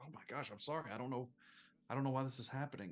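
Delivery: tearful, growing upset. Playing a woman who tries to apologize for crying, getting more upset. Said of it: "getting more and more like upset as she tries to apologize for crying".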